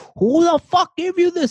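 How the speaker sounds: very high, very loud, shrill scream. Retelling how the chemistry teacher caught him with a novel: imitating a teacher screaming. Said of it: "he screamed at me".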